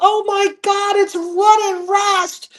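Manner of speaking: put-on very high, very slow, excited shriek. Recalling the badge-checking lady spotting them at the front, imitating her screech. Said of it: "she just screeches at the top of her lungs".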